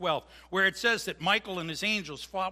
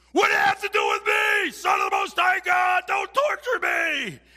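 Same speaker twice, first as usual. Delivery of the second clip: very loud, very high-pitched screaming shriek; 13 semitones higher, 9 dB louder than usual. Retelling a man kneeling before Jesus: imitating a man yelling at the top of his lungs. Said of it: "he yells at the top of his lungs".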